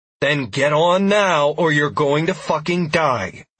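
firm commanding tone like handling animals. The narrator orders a woman to climb on as raptors close in: commanding, ordering tone. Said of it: "I said in my ordering animal's tone of voice".

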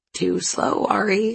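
plain

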